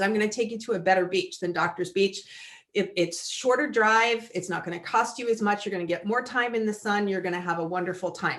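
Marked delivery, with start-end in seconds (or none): none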